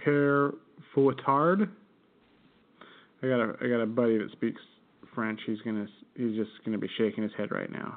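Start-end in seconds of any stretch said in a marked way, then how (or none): 0.1-1.7 awful American accent. Discussing the name Père Fouettard: awful American accent on Père Fouettard. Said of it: "If I say it in my awful American accent".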